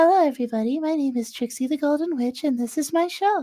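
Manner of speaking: very high voice, perched at top of register. Showing how a voice sounds very high up: very high register voice. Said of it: "talking to you like this".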